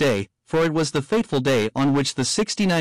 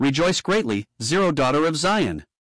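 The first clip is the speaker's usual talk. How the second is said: normal talking voice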